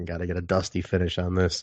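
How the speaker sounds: hushed, under-the-breath stage half-whisper. Retelling a joke half-whispered to a buddy in the theater: imitating own half-whisper. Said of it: "I remember whispering to my buddy".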